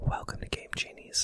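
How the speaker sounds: fake soft, soothing ASMR whisper. Joking about a whispered asmr podcast episode: mock asmr whisper. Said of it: "I'm so creeped out by you even doing that right now".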